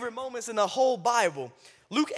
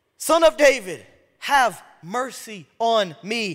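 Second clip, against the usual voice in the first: mock crying out, loud, drawn-out, voice raised; 5 dB louder than usual. Telling how the blind man, told to be quiet, calls out: retelling a louder shout. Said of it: "He literally gets louder".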